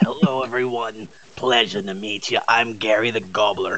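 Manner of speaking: put-on noir-style goblin voice. A podcast member brings his character voice back to greet everyone, noir Gary the Gobbler voice. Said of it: "the noir version of Gary the Goblin".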